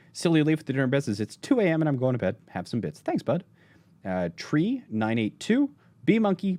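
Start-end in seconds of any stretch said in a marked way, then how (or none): none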